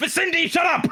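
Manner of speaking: very high, loud, furious shouting. In a role-play scene, a character starts yelling at his sword: yelling. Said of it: "He starts yelling at his sword".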